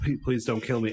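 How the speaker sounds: ordinary delivery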